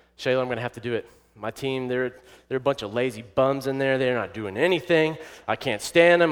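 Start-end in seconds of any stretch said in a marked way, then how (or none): none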